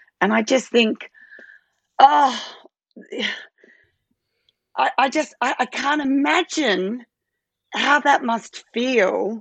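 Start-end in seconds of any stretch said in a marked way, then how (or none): 2.0-9.4 high, halting voice, catching with emotion. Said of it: "it makes me emotional".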